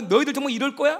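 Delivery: loud, angry scolding. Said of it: "이번에 화가 나갖고".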